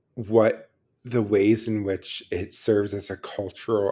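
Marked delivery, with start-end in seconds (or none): none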